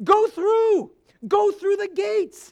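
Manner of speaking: loud, high, prophet-like shout. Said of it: "The prophet shouts out".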